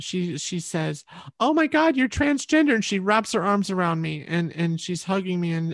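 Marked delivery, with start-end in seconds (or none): 1.4-2.7 very high, shrill, top-of-the-lungs shriek, acted out. Retelling her reaction to hearing a secret: imitating someone shouting. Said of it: "at the top of her frickin' lungs".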